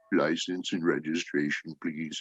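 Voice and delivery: timid, soft, low, meek, quavering little voice. Imagining a cop at the car window asking for papers: put-on small, meek voice. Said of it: "that was the voice I would like to hear".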